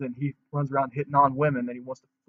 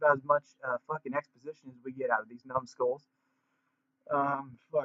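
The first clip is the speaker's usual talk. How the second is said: ordinary talk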